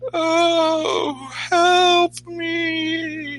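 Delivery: high wail, me drawn out. Game master voicing a voice heard off the path, in a moaning wail. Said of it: "you hear a bit of a moaning wail".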